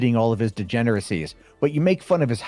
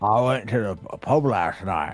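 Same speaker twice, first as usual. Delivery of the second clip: put-on Australian accent; 2 semitones lower than usual. Speaker practising a phrase with another speaker, Australian accent. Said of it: "you've got the Australian accent down".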